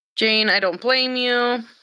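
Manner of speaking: normal talking voice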